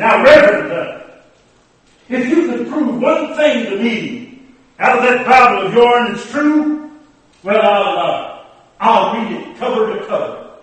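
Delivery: loud, scornful, mocking tone. Preacher retelling what a man who wanted to argue said, imitating a mocking voice. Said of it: "said in a mocking voice".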